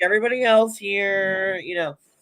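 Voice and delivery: high, put-on voice, played up with fake modesty. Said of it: "And Melissa's like".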